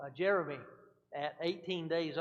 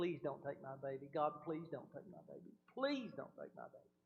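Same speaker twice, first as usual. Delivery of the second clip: mock tearful crying voice, pitch swooping; 9 dB quieter than usual. Retelling praying on the way to the hospital: reenacting a tearful plea. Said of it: "I remember weeping and praying and crying".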